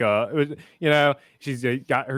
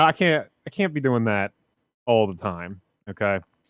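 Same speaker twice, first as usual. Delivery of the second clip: plain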